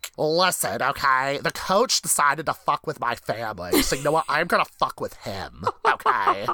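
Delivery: spiteful, passive-aggressive, petty ranting tone. Imagining a character in a reality-show confessional booth: imitating Dan Scott being petty. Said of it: "just being fucking petty".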